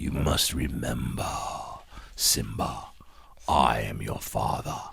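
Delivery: very slow, breathy masked villain voice. Joking about being too close to the mic: Darth Vader voice. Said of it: "my Darth Vader voice".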